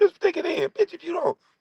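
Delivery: mocking street hustler put-on voice.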